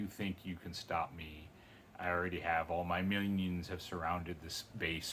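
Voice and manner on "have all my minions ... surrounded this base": ordinary talk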